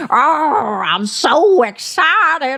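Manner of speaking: put-on excited growl. Recapping a reality episode, mocking a cast member: imitating Brittany Cartwright growling with excitement. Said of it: "growls with excitement".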